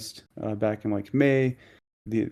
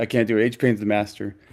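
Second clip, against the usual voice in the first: ordinary delivery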